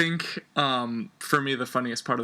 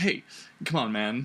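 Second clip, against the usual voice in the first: plain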